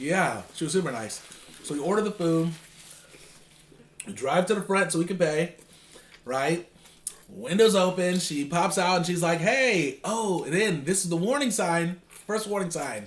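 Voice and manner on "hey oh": put-on chipper, upbeat voice, higher. Retelling what the drive-through worker said at the window: imitating a chipper worker. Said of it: "really chipper and chipper".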